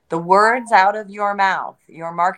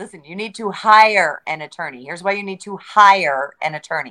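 hire leaned on firmly. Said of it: "Emphasis on hire".

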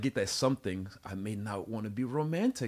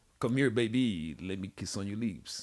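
put-on Paris-style French accent. Joking about how Parisians talk, mock French accent. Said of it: "you know the French accent".

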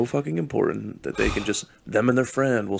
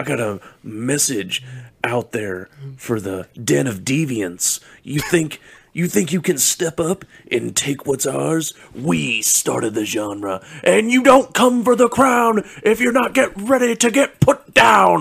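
hyped-up, loud, swooping wrestling promo voice; 5 semitones higher, 6 dB louder than usual. Calling out a made-up rival podcast: mock WWE wrestling promo. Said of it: "that's a good promo right there".

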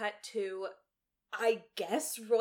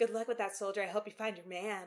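normal talking voice

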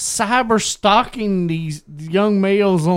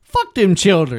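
ordinary talk

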